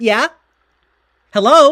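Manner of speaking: very loud, very high phone voice. Imitating how the family answers the phone: imitating family's loud phone voice. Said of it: "suddenly it's like".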